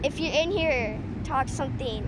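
normal talking voice

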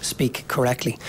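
plain

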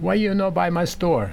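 put-on thick Italian accent. Retelling what the store owner's wife always said to him: heavy italian accent. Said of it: "she in heavy Italian accent".

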